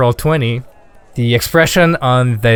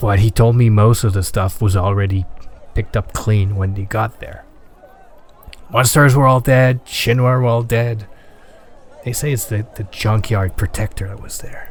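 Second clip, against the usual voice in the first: low, serious voice. Voicing a shopkeeper who leans in to talk: serious low tone. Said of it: "starts talking, like, this serious low tone".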